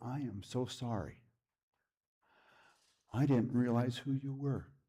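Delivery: put-on tearful, crying speech. Retelling what a crying neighbor said at the door: imitating tearful speech. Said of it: "Through her tears".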